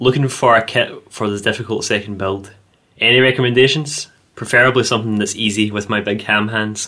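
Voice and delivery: ordinary talk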